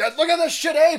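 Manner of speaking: acted, enraged, very high-pitched, loud screaming. Retelling yelling at people in traffic: imitating own screaming. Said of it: "I started screaming".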